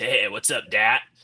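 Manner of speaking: small, rasping voice, slow. Imitating a short freshman golf teammate, in a little raspy voice. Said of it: "had this little raspy voice".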